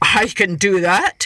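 slow, proud tone. Narrator reads Coyote replying to Hare's instructions, proudly. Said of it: "Coyote said proudly".

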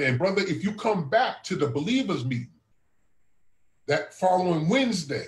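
plain

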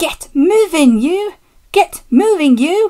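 high, forceful puffing of words. An engine pushes trucks up a hill from behind, puffing. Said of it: "puffed Douglas from behind".

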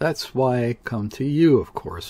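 ordinary delivery

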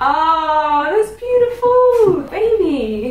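very slow, savoured, thrilled delight, drawn-out "oh". Seeing a gift of diamond hoop earrings: really excited. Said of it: "I'm really excited".

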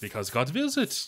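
awful, poorly faked French accent. Retelling one of the Normans' replies from a game's dialogue, in a bad French accent. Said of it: "Your French accent just sounds like you're in Dexter's laboratory".

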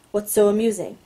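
ordinary delivery

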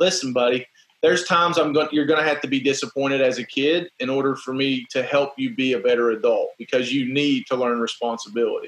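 plain

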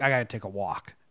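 low, grumbled mutter under the breath. Retelling how a player reacted after losing a game: retelling a muttered outburst. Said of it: "DJ just like yells out like a mutter".

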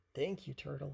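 plain reading voice

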